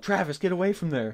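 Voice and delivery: put-on high, sudden yell. Retelling how a companion yelled a warning: imitating someone yelling. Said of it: "Mike yelled".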